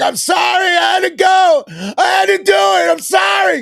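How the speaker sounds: play-acted shrill, very high, slow, dragged-out scream-shouting. Retelling a woman squatting in the street, imitating her screaming. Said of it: "she's screaming the whole time".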